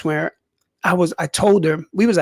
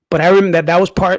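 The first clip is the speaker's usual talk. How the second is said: ordinary talk, nothing marked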